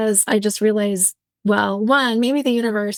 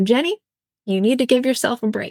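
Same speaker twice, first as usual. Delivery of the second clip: put-on broad, heavy Southern accent. Speaker recalls hearing the mother's voice in their head; thick southern accent. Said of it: "She has a very thick Southern accent".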